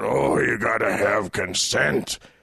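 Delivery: strange unhinged voice, dropped very low. Criticizing a man, the speaker mimics his weird crazy voice. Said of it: "with the crazy voice about".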